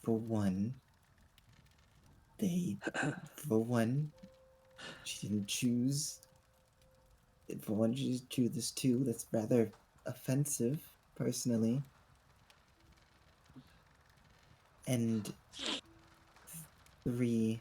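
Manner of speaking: hushed voice. Whispering back in character to someone who whispered an insult: whispering. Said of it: "I'm just gonna whisper back".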